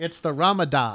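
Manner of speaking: low voice with Italian-flavoured flourish. Correcting the other speaker on how to say the hotel's name, with Italian flair. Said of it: "you have to say it with the Italian flair".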